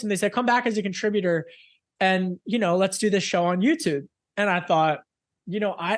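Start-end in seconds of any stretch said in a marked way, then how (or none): none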